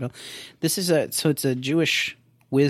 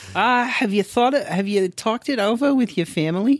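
put-on voice, much higher in pitch and louder; 10 semitones higher, 4 dB louder than usual.

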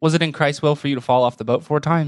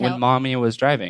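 ordinary talk

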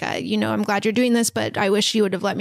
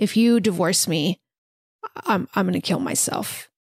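put-on tearful, crying voice; 3 semitones lower than usual. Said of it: "he's crying and says".

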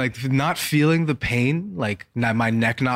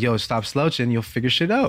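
normal talking voice

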